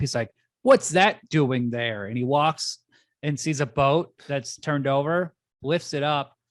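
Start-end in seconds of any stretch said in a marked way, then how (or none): 0.6-2.1 loud, fed-up, irritated, pissed-off delivery. Retelling a movie scene where a guy finds a mess: imitating someone pissed off. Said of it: "he's all pissed".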